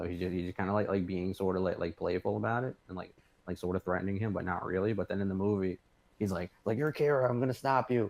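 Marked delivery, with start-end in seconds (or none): 6.8-8.1 play-acted high screaming, accusing tone. Retelling the movie scene where L accuses Light: screaming L impression. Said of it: "screaming at him".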